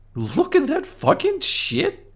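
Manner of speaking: piercing, very high, swooping, rising screech. Voicing a character complaining about a ladder: screeching. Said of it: "he screeches".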